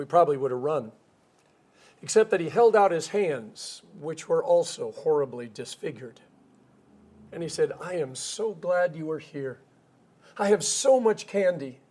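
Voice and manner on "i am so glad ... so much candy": slow, mock kindest, gentlest kindly voice. Retelling what a neighbor said at his door: imitating a very kind, gentle voice. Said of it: "in the kindest, most gentlest voice".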